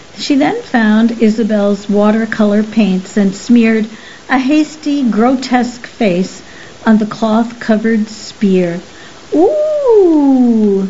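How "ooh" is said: high, drawn-out, swooping exclaimed ooh. Lacey reacts as someone soils the jacket, exclaiming. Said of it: "Lacey exclaimed".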